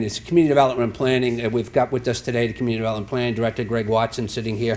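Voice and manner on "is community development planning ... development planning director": rattled off as fast as possible. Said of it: "I'm speaking as fast as I can".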